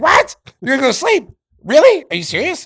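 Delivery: screechy, high-pitched, loud voice. Retelling Larry's reply to a woman who wants to sleep, in a screechy Larry voice. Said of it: "Larry with that screechy voice".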